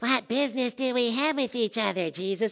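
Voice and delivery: eerie, sinister, creepy demonic voice. Reading a Bible passage aloud, voicing the man who meets Jesus: creepy voice. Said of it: "get to use like a creepy voice like that".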